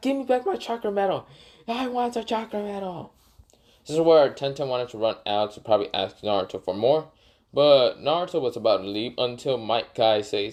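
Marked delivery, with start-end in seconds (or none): 0.0-3.1 play-acted, shrill, very high screaming voice. Retelling a scene where Tenten screams at Igarashi: retelling Tenten's scream. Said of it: "Tenten's screaming at him".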